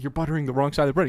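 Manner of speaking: whispered voice. Retelling warning a friend doing a pretend cooking show: retelling a whisper. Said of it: "I'm, like, whispering to him".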